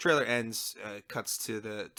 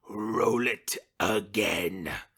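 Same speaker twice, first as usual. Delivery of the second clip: loud, full, booming character voice; 7 dB louder than usual. Retelling what the actor said on stage: Palpatine voice. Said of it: "in his best Palpatine voice".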